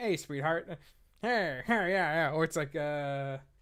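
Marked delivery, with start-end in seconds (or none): 0.0-2.3 put-on wisecracking comedian voice. Showing a co-host how Groucho Marx talked: Groucho Marx impression. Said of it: "Groucho Marx was like".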